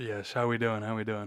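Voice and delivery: very loud, deep, low, booming voice. Greeting the others on the mic: deep mic voice. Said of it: "listen to that voice".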